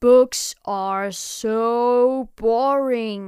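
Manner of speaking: loud, very slow, stretched-out grumble. Big Monster, being read a fairy tale, complains: grumbling. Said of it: "grumbled Big Monster".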